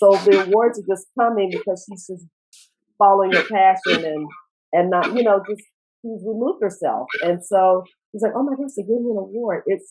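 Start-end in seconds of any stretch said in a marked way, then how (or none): 8.4-9.6 put-on surprise, higher. Quoting a woman's reaction to winning an award, imitating someone surprised. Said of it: "why are you so surprised you won?".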